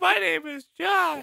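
very high, slow, creaky, puddly mocking voice. Mocking Josh for just sitting there during the show: imitating Josh. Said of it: "Why do I sound like a puddle?".

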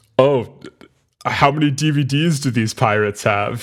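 smug, superior, haughty, snooty upper-crust rich man tone. Retelling a movie scene, quoting an annoying rich passenger: imitating a haughty plutocrat. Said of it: "the most, like, haughty".

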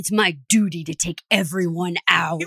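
put-on worked-up anger. Retelling what Nick said after the vote: imitating an angry Nick. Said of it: "Nick was so pissed when he's all like".

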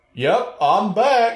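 weird, silly, goofy put-on voice. A speaker quotes a man's line, doing it in his weird voice. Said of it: "in his weird voice".

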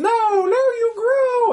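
very high, slow cartoon villain queen voice.

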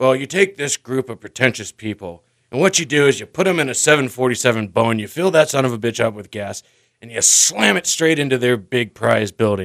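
put-on angry comedian voice. Retelling a comedy bit about people who ought to be killed: imitating angry George Carlin. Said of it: "he's like".

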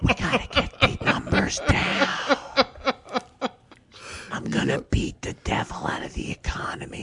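creepy, close-up, soft, breathy whisper. Mocking the one running the country, imitating someone whispering.

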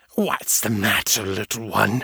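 sibilant, hissing monster creature voice. Reading a story aloud, voicing a creature speaking to Abby, hissing. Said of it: "it hissed".

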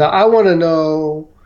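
put-on strange, odd American Southern accent. Retelling what a special agent said on the phone: imitating Special Agent Gregory's odd Southern accent. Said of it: "he had this odd Southern accent".

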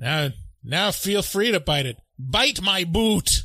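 Austrian-accented put-on voice. A nominated clip from a Human Centipede bit, in an Austrian accent. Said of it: "[name]'s Austrian accent".

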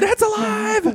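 put-on very high-pitched, excited shrieking children's voices. Telling about a visit to the exhibit, acting out the kids: imitating kids yelling. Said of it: "they're like yelling through the exhibit".

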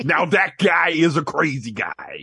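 badly done, very slow, dragged-out put-on voice. Talking about an actor: shitty Jesse Ventura impression. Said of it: "my shitty Jesse Ventura impression".

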